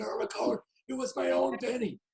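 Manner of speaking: whispered voice. Retelling the nervous child's whispered reply: imitating someone whispering. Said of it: "you whispered back to me".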